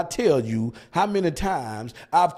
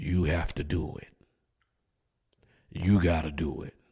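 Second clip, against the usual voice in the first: put-on bass voice, pitched way down, soft; 12 semitones lower, 6 dB quieter than usual. Telling someone they have to do it, spoken in a put-on deep voice. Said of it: "Let me say it with a deep voice".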